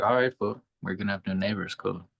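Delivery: ordinary talk, nothing marked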